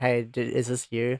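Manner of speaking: usual speaking voice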